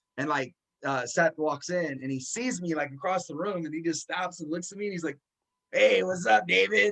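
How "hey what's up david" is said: rough, creaky, slow, raspy drawn-out hello, raised. Retelling how an old high school friend greeted him backstage: Seth's raspy voice. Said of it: "with his raspy voice".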